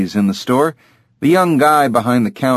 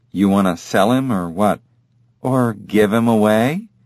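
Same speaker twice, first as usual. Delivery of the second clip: usual speaking voice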